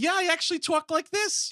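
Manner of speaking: put-on Boston accent, pitched very high. Imitating the character revealing his secret life: Mark Wahlberg, Boston accent. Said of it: "that accent is right where it needs".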